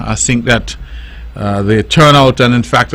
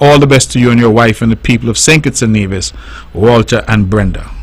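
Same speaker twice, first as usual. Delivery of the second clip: plain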